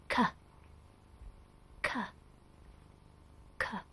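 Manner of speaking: breathy, very soft whispered k, k, k. Showing learners how to make the K sound: whispering the K sound.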